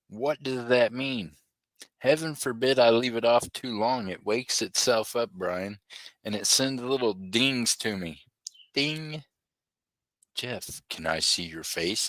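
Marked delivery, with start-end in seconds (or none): 10.3-12.1 weird, eerie, low, creepy voice. Mimicking his phone calling him by name: weird creepy voice. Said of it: "In this weird, creepy ass voice".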